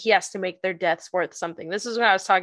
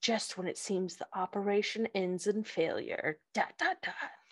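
very quiet, hushed, breathy perfume-commercial voice; 11 dB quieter than usual. Speaker reads out an ominous quote from the episode: breathy perfume ad voice. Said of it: "you always do it in like this breathy perfume ad voice".

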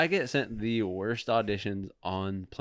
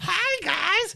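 put-on cartoony kid character voice, higher; 3 dB louder than usual. Imitating a past audition for a cartoon kids show: cartoony kids character voice. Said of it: "cartoony kids character".

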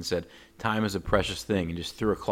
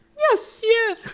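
shrill, very loud, high puppet voice; 9 dB louder than usual. Retelling Wilder's answer to Mr. Salt in a high Muppet-like voice. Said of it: "high muppet like voice".

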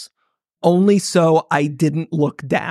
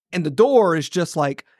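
ordinary delivery

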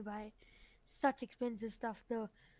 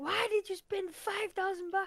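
mock, slow, high-pitched scolding tone; 8 semitones higher than usual. Retelling how a father scolded him in the morning: imitating a scolding dad. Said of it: "he'll start tuning me and say".

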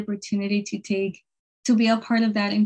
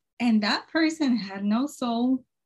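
plain

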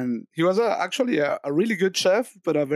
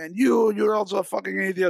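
mock crazed screaming rant, higher pitch; 3 semitones higher than usual. Retelling how a guy lost it at the waiters, retelling a crazed outburst. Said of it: "goes completely crazy".

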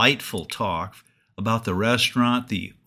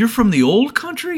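mock excited, very high, loud and quick; 12 semitones higher, 8 dB louder than usual. Retelling how the waiter reacted to the diners' Italian reply, retelling an exclamation. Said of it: "Fulvio jumped and exclaimed".

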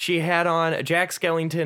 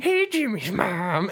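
put-on nerdy cartoon boy voice; 3 semitones higher than usual. Retelling what a woman said into a mic, voicing her in a Carl Wheezer voice. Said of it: "I made her sound like Carl Weezer".

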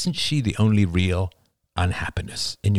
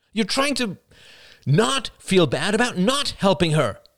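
exasperated, very high exclamation; 13 semitones higher than usual. Narrator reading a son's line to his mother, exclaiming in frustration. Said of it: "exclaimed Oliver in frustration".

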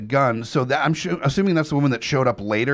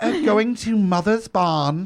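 put-on little lord voice, much higher, slower; 7 semitones higher than usual. Hosts try out ways to say Mother's Barn, in a Little Lord Fauntleroy voice. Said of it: "I'm liking the little Lord Fauntleroy".

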